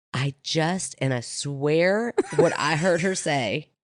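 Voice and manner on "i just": put-on whisper, quieter. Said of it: "she's whispering to me".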